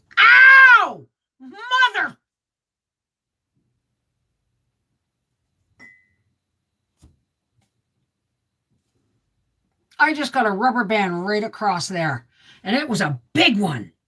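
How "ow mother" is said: sudden loud pained yelp, "ow" stretched, swooping pitch. Struck by a snapped rubber band while talking to folks, yelling in pain. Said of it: "I'm sorry for yelling".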